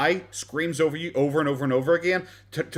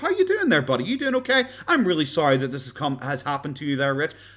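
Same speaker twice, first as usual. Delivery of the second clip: put-on chummy, ingratiating friendliness, sing-song. Pretending to suck up to the host to look good: put-on fake friendliness. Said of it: "be friendly with the host".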